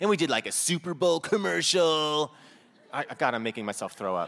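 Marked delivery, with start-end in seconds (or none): 0.5-2.3 sock puppet mascot character voice. Showing how the sock-puppet mascot you wore on your hand talked: sock puppet mascot voice. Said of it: "he kind of talked like this".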